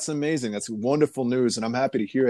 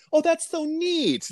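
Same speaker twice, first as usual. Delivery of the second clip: very high, slow, acted, patronizing, condescending tone. Retelling how teachers praised hip hop: imitating condescending praise. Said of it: "in this condescending, like".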